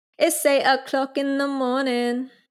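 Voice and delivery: put-on high-pitched British accent like a radio announcer. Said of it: "Sorry for my British accent".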